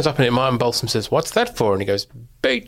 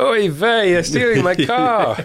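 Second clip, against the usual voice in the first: put-on high, ninety-five-year-old man voice; 6 semitones higher than usual.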